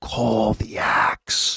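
breathy, chilling, horrifying villain whisper. Recalling a villain whispering to Thor: whispering like Gorr. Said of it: "whispering to, to Thor".

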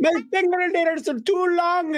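very high, slow Irish accent.

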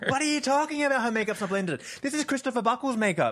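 put-on yelling. Retelling confronting a man across the bar: retelling own yelling. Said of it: "I'm yelling at him now".

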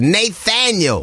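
showy, high-pitched, grand announcing call. Saying someone's full first name the way Oprah would: Oprah announcing voice. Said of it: "you got to say it like an Oprah".

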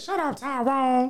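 very high-pitched, put-on country boy voice.

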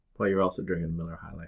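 low, quiet, dismissive scoff. Responding to another speaker naming his go-to bar beer deal, scoffing. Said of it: "Why are you scoffing at it?".

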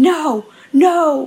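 sudden, high, screamed protest. Retelling what a man started screaming, screaming. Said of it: "And he started screaming".

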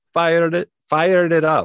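Greek accent sounding Jamaican. Asked to say fire it up in a greek accent: greek accent sounding jamaican. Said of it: "That's just more Jamaican".

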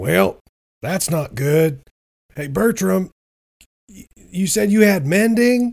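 put-on high, very slow, drawn-out in-character yell. Shouting down to Bertram in a storm: yelling in character. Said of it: "I yell, I yell out".

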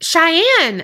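high, loud shout.

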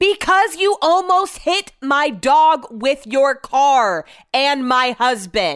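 super loud, high, drawn-out, swooping yell. Recounting a confrontation with a woman who nearly hit their dog, the speaker repeats their words: retelling a super loud yell. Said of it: "I turn around and yell super loud".

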